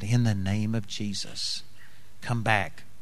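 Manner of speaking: very quiet, hushed, leaned-in, private delivery. Speaker retells what a man leaned over and said in an airport, very quiet. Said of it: "real quietly said".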